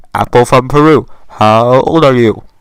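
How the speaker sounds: very loud, insistent shouting scream. Retelling how a woman screamed a question at the speaker as a child, retelling a scream. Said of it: "So she screams it again".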